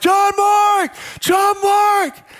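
very high, drawn-out, top-of-the-voice yell. Retelling running around a park looking for a son, retelling yelling at top of voice. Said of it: "I'm yelling at the top of my voice".

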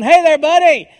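cheery, jovial voice. Pastor at his gas cap greets a person he didn't recognize, retelling a jovial greeting. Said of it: "I just said in a jovial tone".

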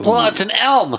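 squeaky, very high-pitched nerd character voice. Podcaster describes a character's tree-growing bag of beans, then speaks as him in a nerd voice. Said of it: "That was a great nerd voice".

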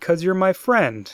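mock heartbroken, dead serious, very sad, pitched high. Recapping an episode's emotional center, quoting a character, in a mock very sad tone. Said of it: "in a very sad tone of voice just goes".

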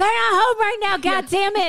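put-on angry shouting. Acting out a joke answering-machine greeting: mock yelling voicemail. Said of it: "leave a message on your machine yelling like that".

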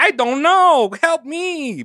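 slow, high-pitched, put-on broken English. Retelling how Tom dodged papers: imitating Tom's broken English. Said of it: "break into, like, broken English".

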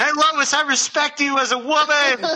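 put-on yelling. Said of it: "he yells across the street".

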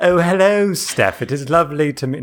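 put-on British accent. Podcast guest greets the host at the start of the show, put-on british accent. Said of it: "this is not my real accent".

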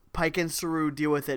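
plain

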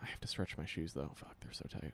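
half-whispered, very quiet whispery voice. In a casual conversation, whispery voice. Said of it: "Don't say that in a whispery voice".

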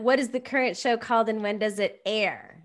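plain

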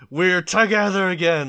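two voices shouting together in unison. Retelling a cartoon scene where two characters shout together: imitating characters shouting in unison. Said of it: "they shout".

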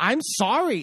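mock-whiny, put-on whining voice. Retelling an argument, mocking someone's attitude when apologizing; mock-whiny i'm sorry. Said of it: "It's the whiny".

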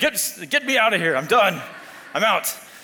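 put-on dramatic, theatrical British accent. Retelling Jonah running from God's order to go to Nineveh, Jonah in a British accent. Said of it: "I don't know why he's British".

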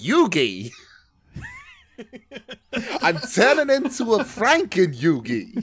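bad Brooklyn accent, very loud, very high, swooping, drawn out. Friends comparing anime archetypes; one does a Joey Wheeler voice. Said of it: "is that Brooklyn?".

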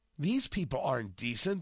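ordinary delivery

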